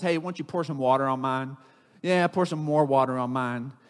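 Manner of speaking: acted, mocking, goading, taunting tone. Retelling a prophet taunting rival prophets: imitating a mocking taunt. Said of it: "He punks him a little more".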